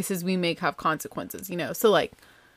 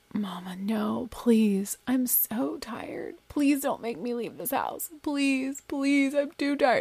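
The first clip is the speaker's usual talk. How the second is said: put-on begging and pleading, high-pitched; 5 semitones higher, 4 dB quieter than usual. Retelling how she refused to leave the house for dinner, imitating someone begging. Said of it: "she went into like begging".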